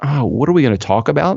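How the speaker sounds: usual speaking voice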